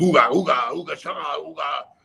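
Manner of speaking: ooga sounds babbled at high pitch. Recalling how Kamala talked, doing Kamala's fake Ugandan gibberish. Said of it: "he talked, you know, Ugandan".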